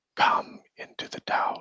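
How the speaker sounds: whispering inner voice. Voicing an apparition that calls the players into a tower: whispering voice in the mind. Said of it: "you hear a whispering in your mind".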